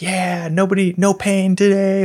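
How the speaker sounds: all-out loud, drawn-out enthusiastic cheering scream. Retelling a race, quoting the high-fiving man: imitating a man screaming. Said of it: "he's just screaming like".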